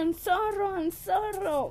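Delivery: mock, high, drawn-out apologetic shout. Retelling apologizing to a man after bumping him: imitating own past shouting. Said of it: "pero era que yo gritaba así".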